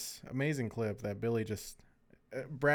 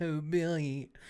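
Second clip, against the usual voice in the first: high-pitched, teasing, taunting mock voice; 5 semitones higher than usual. Retelling how someone mimicked his voice to mock him: retelling a friend mimicking his voice. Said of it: "trying to, you know, mimic my voice and just go like".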